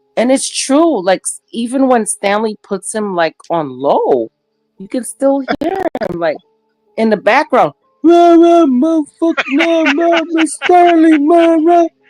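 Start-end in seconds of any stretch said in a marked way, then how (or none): 8.0-11.9 mock rowdy shouting, very high and loud. Describing a loud guy heard even on low, imitating him yelling loudly. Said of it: "He is so loud".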